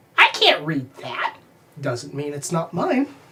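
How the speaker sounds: small, little squeaky voice. Voicing a character in a role-play scene, little squeaky voice. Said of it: "you hear this little squeaky voice".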